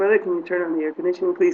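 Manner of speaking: put-on sweet polite voice. Retelling asking a cab driver for air conditioning: imitating own nice polite voice. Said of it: "That's my noi-, nice, polite voice".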